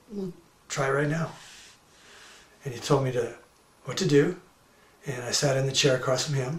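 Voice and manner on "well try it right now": soft, sweet, gently spoken quiet voice. Retelling a guru's reply in a hotel meeting: imitating quiet, sweet speech. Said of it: "he said very quietly and sweetly".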